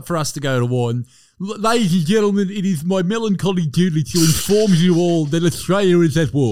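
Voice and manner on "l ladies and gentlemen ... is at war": put-on lisp in a politician's voice. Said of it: "just to get him on there with a bit of a lisp".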